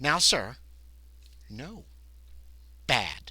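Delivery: very slow, condescending, scolding tone. Voicing a character who takes back the ledger: very condescending. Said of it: "Very condescendingly".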